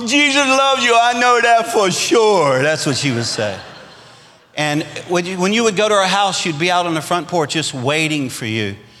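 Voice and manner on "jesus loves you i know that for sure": put-on slow Cajun accent. Recalling how a grandma answered the phone, Mama B's Cajun accent. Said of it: "she had such a Cajun accent".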